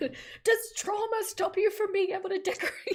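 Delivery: shrill, very high, sassy yelling. Recounting how sassy Nikki immediately yelled at you in a live, imitating sassy Nikki yelling. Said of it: "Nikki immediately yelling at me".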